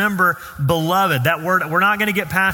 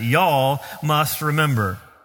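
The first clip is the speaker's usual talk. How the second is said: put-on Southern accent, lower and slower; 3 semitones lower than usual. Teaching a church group to repeat a scripture phrase, in a put-on southern accent. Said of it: "with your best Greek Southern accent".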